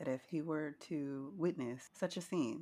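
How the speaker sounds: formal, even-pitched flat delivery. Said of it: "That's exactly how he sounds".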